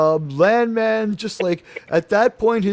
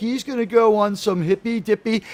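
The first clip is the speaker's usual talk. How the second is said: plain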